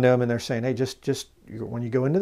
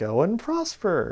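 mocking, sarcastic, pitched-up brush-off tone; 8 semitones higher, 3 dB quieter than usual. Reading a bible verse and acting out the reply: mock-sarcastic. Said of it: "You can just hear him being sarcastic".

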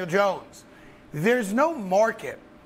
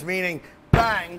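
normal talking voice

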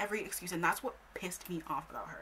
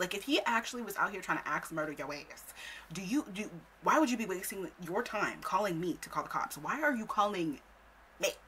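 plain

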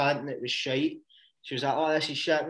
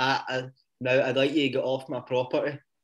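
ordinary talk

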